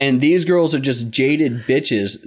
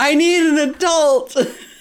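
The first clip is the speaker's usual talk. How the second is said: put-on screaming, pitched higher. Acting out a frightened character crying for help: imitating someone screaming. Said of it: "Jason just running around screaming".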